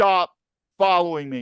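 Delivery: put-on, military-style shouting voice. Retelling a standoff with a man following them, the speaker repeats the order: retelling a shouted military command. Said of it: "I summoned my military command voice".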